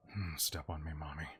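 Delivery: really gross, skin-crawling creepy voice. Voicing a convention fan pushed back by a player: really gross voice. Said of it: "really gross voice".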